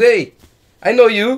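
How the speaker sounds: loud, slow, halting broken English. Retelling a friend's pickup line on the beach: imitating a friend's broken English. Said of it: "his English is very broken".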